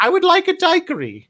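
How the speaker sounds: high, loud, proper English woman's accent.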